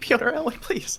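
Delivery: very high, loud, desperate, pleading yell. Voicing a captive who yells for the players: Bridget yelling for help.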